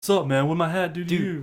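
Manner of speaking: put-on cowboy wrestler character voice. Retelling how JBL reacted after his hat was slapped: imitating JBL. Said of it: "And he's like".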